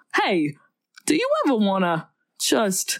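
character voice with pitch swooping up and down. Trying to repeat a quoted question, slipping into Christopher Walken voice. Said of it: "no, that's Christopher Walken".

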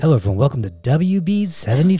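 smooth, late-night jazz radio DJ voice. Welcoming listeners to wb75 in a smooth jazz dj voice. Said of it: "I'm like a smooth jazz DJ".

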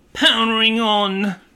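British device announcement voice. Imitating a car Bluetooth transmitter's voice: imitating a British transmitter voice. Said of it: "I guess it's a British Bluetooth transmitter".

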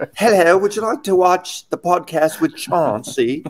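high-pitched, fake, put-on English accent. Imagining a celebrity doing the podcast intro, put on an English accent. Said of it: "a good English".

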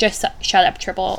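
normal talking voice

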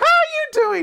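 way-up-high little cartoon mouse voice. Retelling playing with a child who said you're Mickey: Mickey Mouse voice. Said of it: "I have a decent Mickey Mouse".

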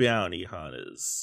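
put-on low, hushed cowboy character voice. Asked by a co-host to do a cowboy impression while introducing the topic. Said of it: "can you do a cowboy impression?".

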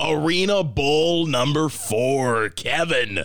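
drawn-out morning zoo sports radio announcer voice. Reading old sports results, in a morning zoo sports radio voice. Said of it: "I went into my morning zoo sports".

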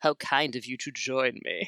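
snide, sarcastic, very bitchy mock politeness. Quoting a character's greeting from the captain, imitating bitchy sarcasm. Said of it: "it's in like this like super bitchy".

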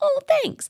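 gushing high and giddy.

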